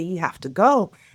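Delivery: mock hysterical crying in a tearful voice. Retelling what a crying girl told her: imitating someone crying hysterically. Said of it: "just hysterically crying".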